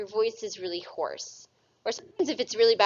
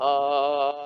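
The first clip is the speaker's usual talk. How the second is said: very low, deep, long drawn-out oh; 7 semitones lower than usual. Explaining vocal vibration, showing a really low frequency: very low-pitched "oh". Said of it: "that's a really low frequency of vibration".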